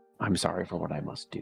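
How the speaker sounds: low, hushed, barely audible half-whisper. Narrating a scene, the speaker voices a man half-whispering to the painting: half-whispering. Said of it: "you hear him whisper to the painting".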